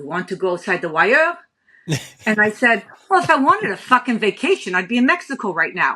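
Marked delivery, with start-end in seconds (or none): 0.0-1.4 put-on French accent. Speaker retelling a man questioning her plan, French accent. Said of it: "That's a pretty good French accent you got there".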